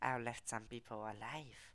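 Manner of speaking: put-on catlike creature voice. While playing a game, speaker repeats his own remark in a Khajiit voice. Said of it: "This is like the Khajiit voice".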